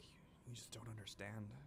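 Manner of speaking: very quiet, barely audible mutter under the breath. Voicing a character's reply after being asked a question: muttered under his breath. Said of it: "under his breath".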